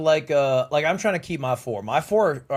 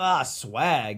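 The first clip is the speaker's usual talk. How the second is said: play-acted disgusted tone, word "swag" stretched out; 4 dB quieter than usual. Retelling his own reaction when a name came up: mock-disgusted tone. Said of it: "I have a disgusted tone in my voice".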